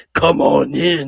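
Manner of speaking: low, weird, eerie, scary creepy voice. Retelling a scene with two red eyes in a dark room, weird scary voice. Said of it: "this weird, scary voice that's like".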